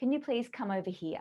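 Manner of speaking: falling intonation, ending downward on here. Teaching command tonality with a request, falling pitch at the end. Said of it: "our tonality or our intonation at the end goes down".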